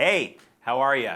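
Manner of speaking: shouting into the microphone. A host greets listeners at the start of a catch-up show, yelling into the mic. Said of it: "Sorry to yell into the mic".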